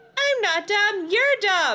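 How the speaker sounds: very high, squeaky ventriloquist-dummy voice. Lindy makes the dummy talk back, in a high squeaky dummy voice. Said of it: "Lindy made the dummy say in a high squeaky voice".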